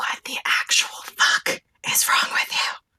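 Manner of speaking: whispered, breathy, hushed shout. Confronting a character in character without waking the sleeping others: yelling quietly. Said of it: "I'm gonna make this as quiet as I can".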